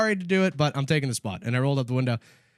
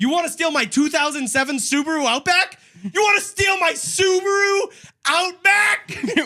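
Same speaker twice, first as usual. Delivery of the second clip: very high, mocking jeer through laughter; 5 dB louder than usual. Retelling taunting the man after starting to laugh: retelling laughing while talking. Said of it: "And then I started laughing".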